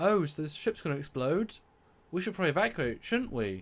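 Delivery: totally unbothered, casual, unconcerned delivery. Retelling a scene where the ship may explode: imitating Wesley's unconcerned tone. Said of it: "the lack of concern in his tone of voice".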